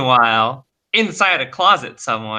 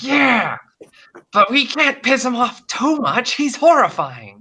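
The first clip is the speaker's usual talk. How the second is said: much higher, strange, nervous monster voice. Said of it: "the other one being like".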